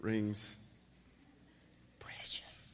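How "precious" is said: very soft, barely voiced whisper. Joking about talking to oneself during a sermon: Smeagol voice. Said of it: "Like Smeagol and Lord of the Rings".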